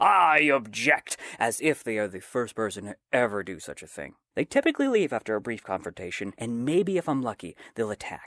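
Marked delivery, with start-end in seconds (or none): 0.0-1.2 mock-screaming. Wedding worker acting out a sword-waving guest barging in: retelling a scream.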